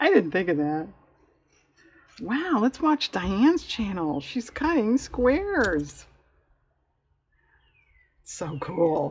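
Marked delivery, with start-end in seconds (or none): 2.2-9.1 slow, drawn-out, sing-song, overdone fake enthusiasm. Filming herself cutting squares, the speaker comments on her own channel: sarcastic.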